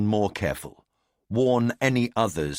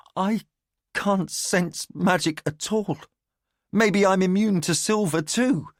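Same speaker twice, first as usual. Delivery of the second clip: trembling, shaky, very high-pitched voice; 10 semitones higher than usual. The boy freezes, then answers the narrator's warning in a shaky voice. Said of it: "said in a shaky voice".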